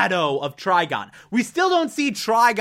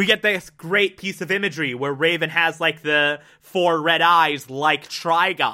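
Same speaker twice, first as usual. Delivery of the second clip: ordinary talk, nothing marked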